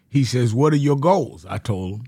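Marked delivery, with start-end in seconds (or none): 0.5-1.4 put-on British accent. Retelling what an organizer said on meeting him: imitating Bayard Rustin's British accent. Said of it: "He talked like a British accent".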